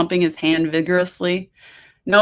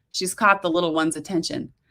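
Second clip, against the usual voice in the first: plain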